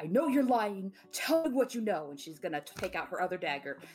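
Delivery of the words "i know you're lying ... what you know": most intimidating, menacing voice. Voicing a character threatening a liar with daggers: most intimidating voice. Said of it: "I guess I should change my voice".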